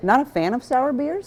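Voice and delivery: slow speech while chewing, mouth full. Giving an opinion on a sour beer, talking with mouth full. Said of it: "I shouldn't talk with my mouth full".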